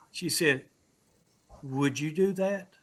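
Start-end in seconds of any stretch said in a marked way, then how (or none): 1.7-2.7 mock heartfelt, sincere, earnest, genuine-sounding tone. Telling John what a woman said when offered prayer, quoting a sincere request. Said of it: "in the most sincere voice".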